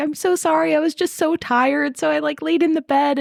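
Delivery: put-on, weepy, tearful voice through tears. Retelling what a kid said about his missing shoes; imitating a kid crying. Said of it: "And he's like crying about it".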